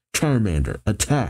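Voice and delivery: ordinary delivery, nothing marked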